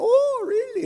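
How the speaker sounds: put-on Polish accent, pitched very high. Quoting the priest's reaction when told the speaker is discerning: Polish accent. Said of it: "In his, his Polish accent".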